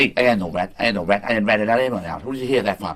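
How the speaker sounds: put-on New York wiseguy voice and mobster accent. In a theme-park ride scene, speaking in a New York mobster accent. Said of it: "can they do like a like a New York kind of like mobster?".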